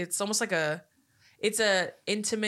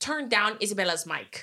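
put-on, poorly done Italian accent. Retelling a movie scene where Isabella cuts a mic: imitating Isabella's terrible Italian accent. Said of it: "she has a terrible Italian accent".

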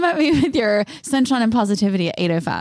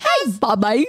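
fake Australian accent, slipping in unintentionally. Imitating a kid's mom calling out to bobby, accidentally in an australian accent.

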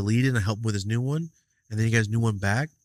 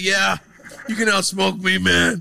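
high, loud, raspy, creaky put-on voice; 9 semitones higher, 5 dB louder than usual. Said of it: "different voice I did".

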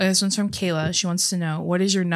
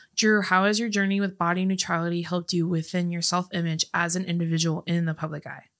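normal talking voice

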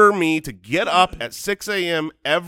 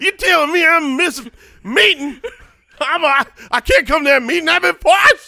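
cartoon cowboy voice, pitched much higher; 10 semitones higher, 5 dB louder than usual. Doing a working man who claims poisoning to skip meetings, in a Yosemite Sam voice. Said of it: "Is that Yosemite Sam?".

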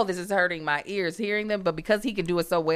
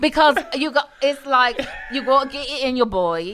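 put-on Cockney accent, much higher; 6 semitones higher, 5 dB louder than usual. Speakers try out accents together, one demonstrating: cockney accent. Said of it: "if we were to do a Cockney accent".

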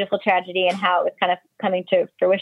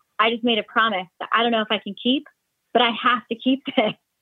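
near-tearful, on the verge of crying; 4 semitones higher than usual. Retelling a man's call to his wife about a promise: imitating someone almost in tears. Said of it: "almost in tears".

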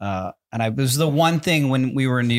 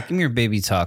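ordinary talk

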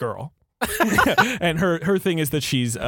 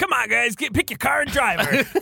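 put-on game announcer voice, higher-pitched; 8 semitones higher than usual. Asked if that was the Crazy Taxi voice, the speaker repeats it: Crazy Taxi announcer voice. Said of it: "that was the crazy".

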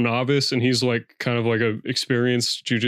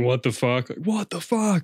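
mock scream, high and kept mild; 5 semitones higher than usual. Speaker retelling the moment their kneecap slipped out at the gym, retelling a scream. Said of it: "I just started screaming".

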